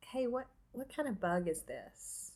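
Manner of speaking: offhand, casual, high-pitched stage whisper. Retelling how the husband asked about a bug: imitating a casual whisper. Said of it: "Like, whispers to me".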